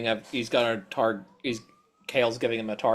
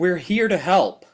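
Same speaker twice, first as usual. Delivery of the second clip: raised, pitched-up shouting; 6 semitones higher, 3 dB louder than usual. Answering a character who shouts from a window: yelling back. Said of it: "I just yell back".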